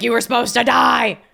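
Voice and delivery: put-on harsh, grating, creaky, furious rasp. Reacting to a film scene, voicing the Grim Reaper: angry Grim Reaper voice. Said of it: "Grim Reaper's angry. He's like".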